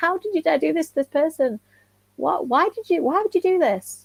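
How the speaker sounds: mock high, shouted outburst. Retell how she sent you screenshots and demanded answers, imitating someone shouting. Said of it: "her shouting at me like".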